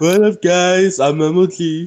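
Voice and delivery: slow, unhurried, drawn-out "hello". Teasing another speaker about liking MLG's voice: imitating MLG's voice. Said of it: "I didn't know you love M L G's voice".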